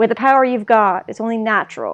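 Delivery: ordinary talk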